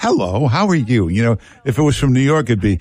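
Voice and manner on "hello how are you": mock sugary, warm, sweet, neighbourly friendliness. Imitating how a caller from Utah sounds: warm, sweet, friendly voice. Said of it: "You sound so warm and sweet".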